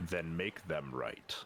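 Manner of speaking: resonant, deep, ethereal otherworldly voice. A being confronts someone who ran from their clan: booming, ethereal, deep voice. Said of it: "you hear this booming, ethereal, really deep voice".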